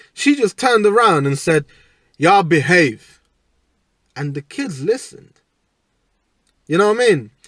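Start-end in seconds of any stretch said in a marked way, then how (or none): 2.2-3.2 imitated thick, heavy Caribbean accent. Telling of an old woman who quieted the kids, the speaker quotes her in a thick caribbean accent. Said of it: "she had that thick Caribbean accent".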